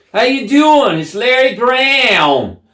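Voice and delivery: thick New England drawl, very high and loud. Retelling how an acquaintance sounds on the phone: imitating a really thick accent. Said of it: "he's got this really thick accent".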